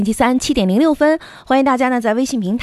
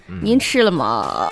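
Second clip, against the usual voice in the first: very low croaking vocal fry, Beijing accent; 8 semitones lower than usual. Demonstrating a voice type to the other speaker, vocal fry with beijing accent. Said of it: "这个音".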